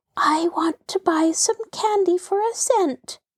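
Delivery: timid little whisper. One of two visitors at the candy showcase speaks up in a timid little whisper. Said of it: "whispered in a timid little voice".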